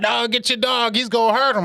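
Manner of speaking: put-on, shrill, very high, frantic screaming. Retelling how the neighbor came out of the house: imitating a neighbor screaming. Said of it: "she come out the house screaming".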